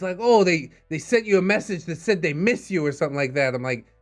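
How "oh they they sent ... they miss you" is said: angry, heated delivery. Retelling the wife's reaction to a message: imitating a heated accusation. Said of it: "She got really fucking heated".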